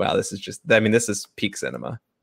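ordinary delivery

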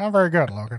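put-on sinister, very old man voice. Acting out a skit as the dad, voice like a ninety-year-old man from an old tv show. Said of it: "He sounds like a ninety-year-old man from".

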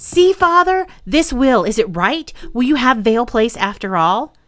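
keen, hopeful, eager and excited tone. A son holds out papers to his father and asks, eager. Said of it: "said Pelham eagerly".

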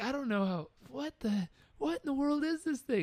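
fake laughing through the words. Retelling how a man reacted to an orange-square painting, acting out him laughing. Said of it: "And he laughed".

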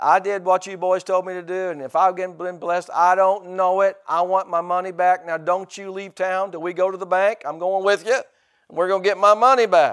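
put-on feisty, sassy old southern lady voice. Retelling what a grandma told a minister on the phone, imitating a sassy southern grandma. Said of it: "This is a sassy southern grandma".

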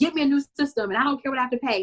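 high, upset, frantic, panicked voice. Retelling what he told the company on the phone, retelling his upset panic. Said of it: "So he's he's upset".

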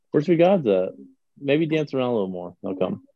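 normal talking voice

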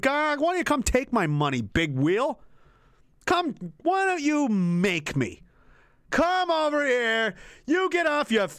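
slow, defiant, mock-challenging taunting tone. Retelling how the people answered the King of England, mock-defiant taunt. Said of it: "they said".

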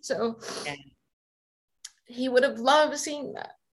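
teary voice, on the edge of tears. Remembering their late dad, getting teary. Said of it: "I'm getting teary".

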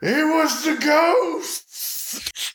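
very high-pitched hollering. Playing their character, a player hollers back at everybody in the lobby, shouting at everyone. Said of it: "holler back and shout at everybody".

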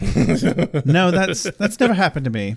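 openly sarcastic delivery. Retelling Wesley's reply after a long pause: imitating Wesley being sarcastic. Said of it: "but he was being sarcastic".

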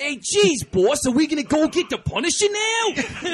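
loud, high-pitched cartoonish New York accent. Mocking the accents heard in a movie, a cartoony New York accent. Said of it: "every one of the New York accents".

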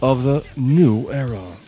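put-on TV news narrator voice. Practicing for a future show, he redoes the line in his Dateline voice. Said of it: "It's my Dateline voice".

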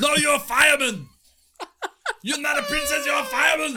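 shrill, very high, shouted movie-style yell. Quoting a movie line with a co-host while talking about films, retelling a yell. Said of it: "if you don't understand why we're just yelling".

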